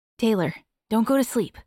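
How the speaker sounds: calmer, gentler tone. Reading a story aloud, a character urging someone not to fall asleep: softer voice. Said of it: "in a softer voice".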